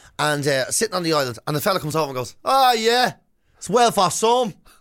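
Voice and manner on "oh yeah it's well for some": put-on slow Dublin accent, pitched up. Retelling a man who came over on the honeymoon island, in a Dublin accent. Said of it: "Dublin accent".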